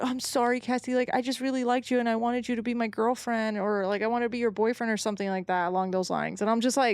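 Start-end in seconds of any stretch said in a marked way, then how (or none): 0.0-4.9 bawling, sobbing, crying through every word. Retelling a suspect's interrogation, imitating someone bawling. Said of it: "bawling his eyes out".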